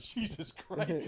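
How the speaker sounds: breathy whisper, half laughing. Retelling the dad's reaction after he ran over a leg: imitating dad half-laughing. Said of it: "He was, like, kinda laughing".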